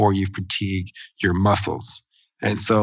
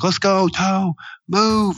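mock yelling, very high and very slow; 10 semitones higher than usual. Retelling how dad yelled a pep talk at their toe, retelling dad's screaming. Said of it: "He's screaming at it like".

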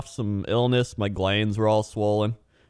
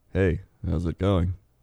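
reluctant, glum tone, lower pitch; 4 semitones lower than usual. Showing a second way to say hello: sounding like having a bad day. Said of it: "It just sounds like you had a bad day".

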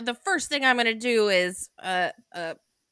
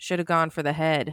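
dry, expressionless, low, quick deadpan; 4 semitones lower than usual. Retelling a ten-year-old son's comment on a scene: retelling a deadpan remark. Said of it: "deadpan said".

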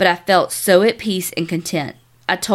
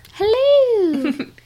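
creepy voice, pitched up, stretched. Greeting the ladies, the speaker channels Mrs. Doubtfire: creepy Mrs. Doubtfire voice. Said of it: "or creepy Carrie".

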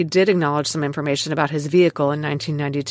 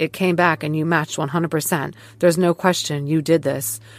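usual speaking voice

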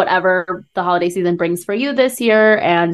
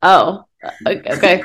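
put-on hesitant, surprised okay. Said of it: "And I'm like".

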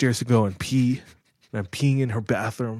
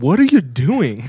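very loud, demanding shout; 3 semitones higher, 8 dB louder than usual. Retelling the moment mom walked in during the jacket cutting, quoting mom. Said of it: "my mom walks in mid-cut, and she says".

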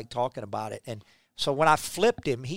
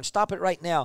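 mock screamed-out hollering; 4 semitones higher than usual. Recalling an old man coming out of the dugout, imitating him hollering. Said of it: "And he's hollering".

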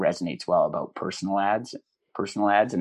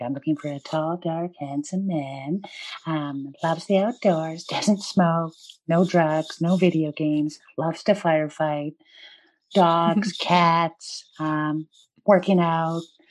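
very high-pitched cartoony woman's voice; 10 semitones higher, 3 dB louder than usual. Showing how a bit gets a comedic level, in a cartoony woman's voice. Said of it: "in a cartoony woman's voice".

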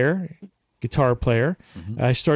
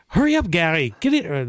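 clumsy, terrible put-on Irish accent; 4 semitones higher than usual. Retelling what a stranger called out leaving a pub in Ireland: terrible Irish accent. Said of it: "That's a terrible accent".

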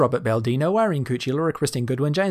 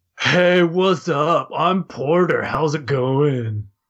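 slow, drawn-out douchey bro drawl; 4 dB louder than usual. Voicing the character Porter introducing himself: douchey Porter voice. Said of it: "I wanted to give him this sort of like douchebag-ish kind of voice".

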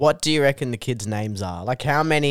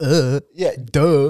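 mocking dismissive "duh", louder; 3 semitones higher, 5 dB louder than usual. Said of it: "she's like".

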